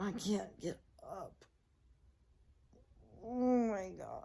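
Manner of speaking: hoarse, croaky voice, a bit high. After accidentally sleeping away two hours, struggling to get up, croaky voice. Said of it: "my voice is like all croaky".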